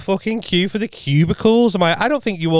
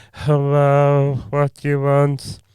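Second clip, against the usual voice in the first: put-on, very slow speech. Retelling how a slow bar worker greeted customers: imitating a very slow bar worker. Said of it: "he was, like, dead slow".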